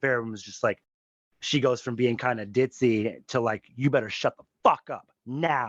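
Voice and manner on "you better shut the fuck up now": put-on gangster tone. Recapping a scene where she turns on a man, Varen going all gangster. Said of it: "she gets all gangster on him".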